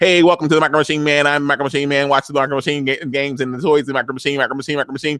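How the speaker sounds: put-on rapid-fire, fast-talking ad voice patter. Recapping a TV episode, imitating the Micro Machine Man's rapid-fire talk. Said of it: "I'm going to be talking like that".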